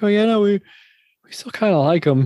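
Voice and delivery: very high, sorrowful, sad voice. Retelling what David said about Marvin Lewis: imitating David sounding sad. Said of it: "hear the sadness in his voice".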